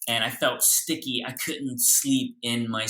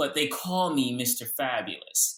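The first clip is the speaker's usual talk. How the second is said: ordinary talk, nothing marked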